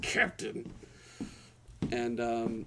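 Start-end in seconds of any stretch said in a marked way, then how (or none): 0.0-0.7 hushed, seething angry whisper through clenched anger. Storyteller voicing Dalvion as he calls to the captain: Dalvion's angry whisper. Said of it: "He whispers, he's like with anger".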